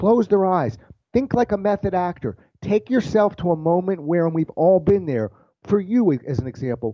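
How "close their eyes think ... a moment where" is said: ordinary delivery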